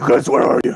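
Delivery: urgent, loud calling out. Calling out in character to find the missing group: screaming. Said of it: "He just screamed".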